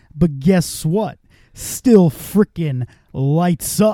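deliberate, weighty, slow, measured cadence. Quoting the collector's favourite line, imitating the collector's cadence. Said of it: "his cadence is so fucking good".

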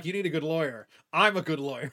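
ordinary talk, nothing marked

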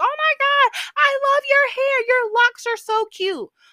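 shrieking, very high, very loud, excited gush. Retelling a girl who once ran up to the speaker: imitating a girl screaming. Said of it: "run up to me screaming like".

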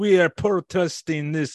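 slow, high, horrible put-on French accent. Quoting protesters in France at the Eiffel Tower: horrible French accent. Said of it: "It's a horrible French accent".

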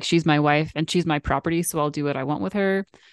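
ordinary talk

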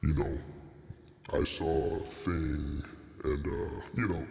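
put-on distorted disguised voice. Mocking a guy who talks with a disguise voice, the speaker mimics that disguised voice. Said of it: "talking with that disguise voice".

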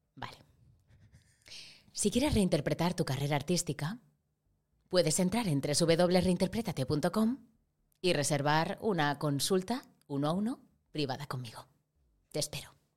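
slick, polished corporate promo voice. Speaker advertising private consultations on his website, in a corporate voice. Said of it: "a decir con voz de corporativa".

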